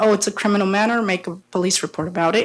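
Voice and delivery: normal talking voice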